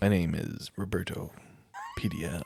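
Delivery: swooping radio-announcer voice, like a radio host. Repeating another speaker's introduction back, imitating a radio voice. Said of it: "and I have a radio voice".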